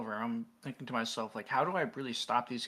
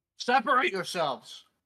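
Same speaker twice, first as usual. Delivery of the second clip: very authoritative, harsh and loud; 7 semitones higher, 5 dB louder than usual. Calling out to a crowd in character: most authoritative, harsh tone. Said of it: "in my most authoritative and harsh tone".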